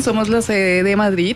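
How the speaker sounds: ordinary delivery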